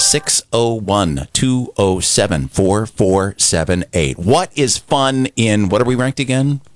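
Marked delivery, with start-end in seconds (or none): 0.0-4.2 slow, deliberate pace. Reading out a phone number for listeners: saying it slowly. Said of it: "I'll say it slow".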